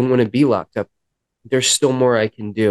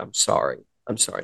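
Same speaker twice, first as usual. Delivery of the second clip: put-on tearful crying voice, quieter; 8 dB quieter than usual. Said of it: "And I'm crying".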